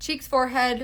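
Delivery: ordinary talk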